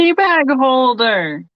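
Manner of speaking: voice projected as if calling from far away. Naming an item shown on a small screen, yelling as if far away. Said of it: "I'm like yelling like I'm farther away".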